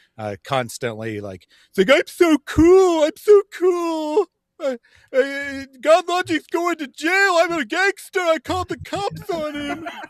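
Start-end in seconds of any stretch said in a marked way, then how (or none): 1.9-9.9 very loud, very high, boastful, mocking boy voice. Mock a man in his thirties who never grew up, in a mocking twelve-year-old boy voice. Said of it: "he acts exactly like a twelve year old boy".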